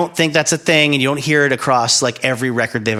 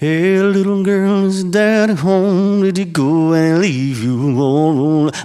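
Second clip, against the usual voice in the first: very slow, high, exaggerated, cartoonish Mississippi drawl; 5 semitones higher than usual. Contrasting Jersey accents with Southern ones, in a cartoonish Southern accent. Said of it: "That's Southern. That's fucking Mississippi".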